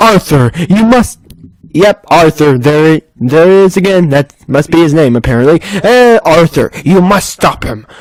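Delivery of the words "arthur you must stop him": ominous, menacing, threatening delivery. Reading a scripted line addressed to Arthur; menacing. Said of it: "Why am I saying that menacingly?".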